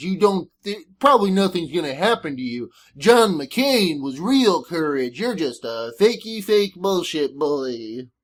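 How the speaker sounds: cartoon dog voice with swooping, swinging pitch. Imitating a commentator he hates, voice drifting into Droopy the dog. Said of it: "my impression of people that I hate turns into Droopy the dog".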